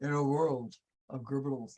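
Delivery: deep, hushed movie trailer narrator voice. Showing how a show's intro line should be read, in a deep voice. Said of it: "do it with a deep voice".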